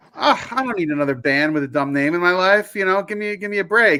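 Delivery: normal talking voice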